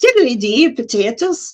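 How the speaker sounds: unconvincing put-on Irish accent. Joking stock phrase that's their only irish accent, put-on irish accent. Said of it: "That's the only way I've got an Irish accent".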